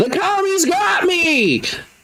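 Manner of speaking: put-on heavy Southern accent, very high, loud yell. Game master narrating to players, a voice heard, thick southern accent, shouting. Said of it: "a very thick Southern accent start shouting".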